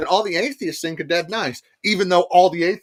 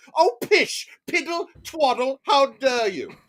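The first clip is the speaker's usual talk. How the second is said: put-on high, stuffy, pompous affronted outrage; 8 semitones higher than usual. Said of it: "mock pompous outrage retelling Braxton".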